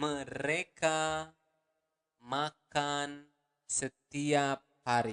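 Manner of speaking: carefully spaced, deliberate words. Teaching learners an Indonesian sentence, saying it once more, repeated slower. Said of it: "One more time, slower".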